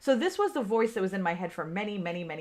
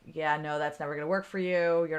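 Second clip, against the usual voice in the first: put-on aggressive voice, lower; 3 semitones lower than usual. Retelling what a critical inner voice said: imitating an aggressive inner voice. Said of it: "it was pretty aggressive this time".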